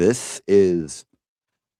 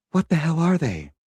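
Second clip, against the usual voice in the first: alarmed, much higher-pitched movie-style voice. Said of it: "I would like to read one of them".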